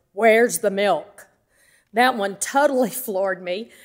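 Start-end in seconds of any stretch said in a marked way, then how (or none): 0.2-1.3 loud, mock big booming voice. Retelling a caller's first words on the phone: imitating a booming voice. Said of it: "I hear that booming voice".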